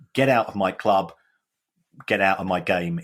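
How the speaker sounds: ordinary talk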